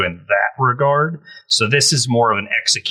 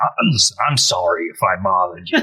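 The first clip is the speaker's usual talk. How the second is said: low, put-on character voice with swooping, wandering pitch; 4 semitones lower than usual. Acting out a guy apologizing for bothering someone: Columbo voice. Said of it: "I don't know why I did that in Columbo voice".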